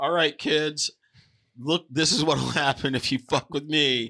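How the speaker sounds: threatening dad voice. Imagining a dad warning his kids: mock threatening dad. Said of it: "a family and the dad just being like".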